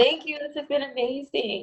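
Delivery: tearful crying, slow and high-pitched. Thanking the other speaker after an interview, crying while talking. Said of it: "I'm crying".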